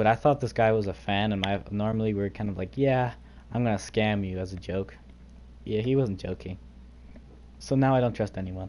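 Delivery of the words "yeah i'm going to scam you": ordinary delivery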